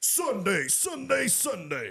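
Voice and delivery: very loud announcer hype. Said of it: "Give us some Fred Caldwell Chevrolet energy".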